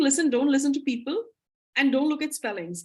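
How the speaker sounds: ordinary delivery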